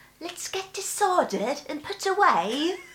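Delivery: very high British accent, a touch posh. Asked to say the same line in a British accent: British accent. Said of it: "Och brittiska".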